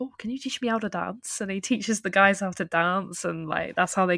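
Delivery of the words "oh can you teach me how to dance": put-on Welsh accent, pitched high. Speaker retells a show's plot, quoting its characters in a welsh accent. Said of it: "petition for you to have this Welsh accent the entire episode".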